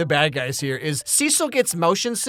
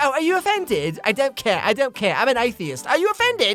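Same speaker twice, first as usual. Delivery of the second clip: put-on higher-pitched English accent; 6 semitones higher than usual. Imagining what the talking dog will say next: Ricky Gervais impression. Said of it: "and it's Ricky Gervais".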